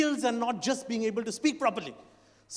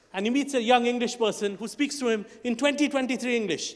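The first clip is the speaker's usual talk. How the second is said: ordinary talk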